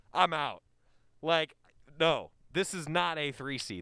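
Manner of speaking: normal talking voice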